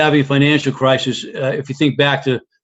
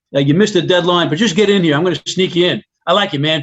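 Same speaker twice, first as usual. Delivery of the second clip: put-on bada-bing New York accent; 3 semitones higher than usual. Retelling meeting a recruiter from new york: imitating a new york accent. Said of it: "that New York thing going on".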